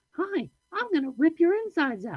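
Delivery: very high, sweet, bouncy, playful doll-like sing-song. Speaker imagines a haunted AI keeping Chucky's good-guy voice: high playful Chucky voice. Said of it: "that high playful voice".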